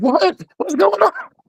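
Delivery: very high-pitched voice on the verge of crying. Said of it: "trying not to cry".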